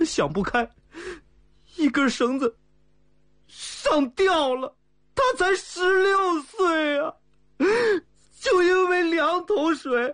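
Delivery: tearful, crying through the words. A young man speaks to a leader, crying. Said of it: "别哭了，别哭了啊！".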